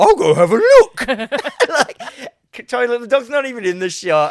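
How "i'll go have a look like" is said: loud, high-pitched cartoon dog voice, belted. Describing a show where the dog walks out of shot, the speaker quotes it in a Scooby-Doo voice. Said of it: "it's got a Scooby Doo voice. goes".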